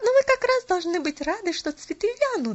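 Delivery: eager exclaiming. Reading a story, a character replies to someone studying their reflection, exclaiming. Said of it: "воскликнула Поляна".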